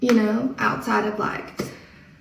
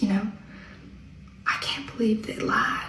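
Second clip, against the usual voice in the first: put-on hushed voice, quieter; 9 dB quieter than usual. Retelling what a lady in the grocery line said: imitating someone speaking quietly. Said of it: "she got real quiet".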